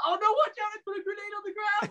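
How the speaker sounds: very high-pitched, alarmed yell. Retelling a warning to a teammate in the hall: imitating own yell. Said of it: "you just hear me yell".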